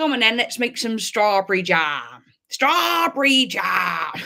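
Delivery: big, loud, booming character voice. Trying out a voice you admit you're not good at, sounding like Hagrid. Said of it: "Sound like Hagrid".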